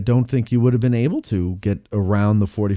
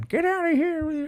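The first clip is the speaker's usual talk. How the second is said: put-on grumpy old man voice, much higher, quieter; 5 dB quieter than usual. Annoyed, the speaker acts out waving a fist: grumpy old man impression. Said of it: "I waved my fist like an old man".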